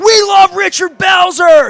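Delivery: very high, very loud, drawn-out yell. Driving past Belzer smoking outside a hotel, the speaker retells yelling to him. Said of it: "and I yelled".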